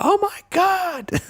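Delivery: high, slow, drawn-out, stunned freak-out. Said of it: "I was freaking out".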